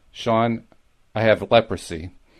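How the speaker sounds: put-on sorrowful voice. Retelling a brother-in-law's phone call to Sean, quote him in a mock very sad voice. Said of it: "said in a very sad voice".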